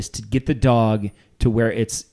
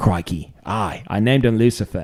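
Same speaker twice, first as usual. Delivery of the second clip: slow, muddled, hard-to-place put-on Australian accent. Retelling what a dog trainer said, imitating an Australian accent. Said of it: "I don't know what that accent was".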